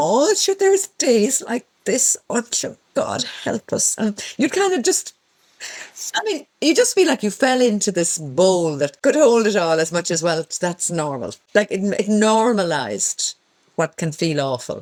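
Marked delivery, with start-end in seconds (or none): 0.0-4.0 put-on Kerry accent. Quoting what she'd say instead of telling you to pull up your socks, in a lovely Kerry accent. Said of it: "in this lovely Kerry accent".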